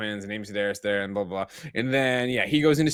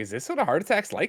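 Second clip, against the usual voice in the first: ordinary talk, nothing marked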